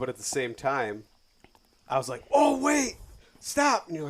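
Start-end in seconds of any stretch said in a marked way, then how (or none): 2.3-3.9 sudden, thrilled, shrill, booming, excited yell. Speaker retells to the listener shouting during their ride together: retelling an excited yell. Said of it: "Why are you yelling?".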